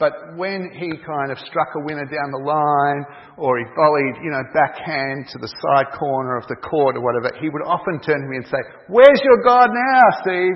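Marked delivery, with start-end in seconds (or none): 8.9-10.6 very high, very loud put-on American accent. Quoting a man he played tennis with, after he won a point: american accent. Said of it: "in his American accent".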